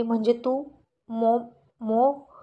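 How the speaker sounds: slow, terrified, frightened, faltering, broken-off stammer. Reading a story: character realizes who is calling, very frightened voice. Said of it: "फार घाबरलेल्या आवाजात म्हणाली".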